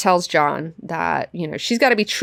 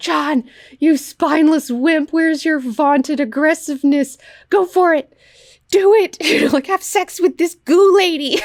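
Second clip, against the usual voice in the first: put-on harsh mocking tone, higher pitch; 11 semitones higher, 3 dB louder than usual. Retelling a comic scene, imitating a character taunting harshly: imitating someone taunting harshly. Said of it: "she's being such a bitch about it".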